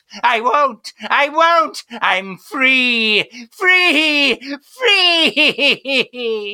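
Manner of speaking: very slow, stretched-out, drawn-out screaming. Character done taking orders from someone, screaming. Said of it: "Stop screaming free".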